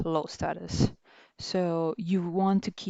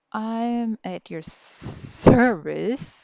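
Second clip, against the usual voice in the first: very slow, dry, sarcastic tone, raised in pitch; 3 semitones higher, 5 dB louder than usual. Demonstrating how the phrase sounds said with tone, sarcastic. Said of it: "in a sarcastic way".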